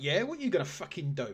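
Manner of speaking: put-on spider voice, cocky. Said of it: "This walked with attitude".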